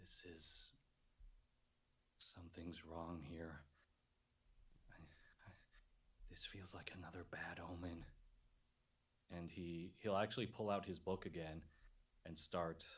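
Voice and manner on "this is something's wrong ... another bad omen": hushed whisper, much quieter. Narrating a character looking up at the misty mountain: whispering to himself. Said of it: "he kind of just whispers to himself".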